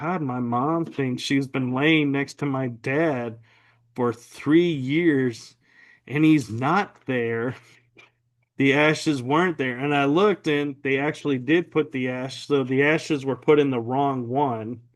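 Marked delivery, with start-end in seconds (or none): none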